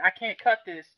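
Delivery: mock whining, complaining tone. Retelling how the guy cutting weeds reacted to a huge spider, imitating a whine. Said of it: "Not cried, but he whined".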